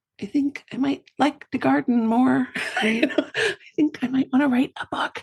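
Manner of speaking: small, high inner voice, wondering aloud. Acting out a small inner voice that speaks up: whispering inner voice. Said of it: "one little whispering voice inside going".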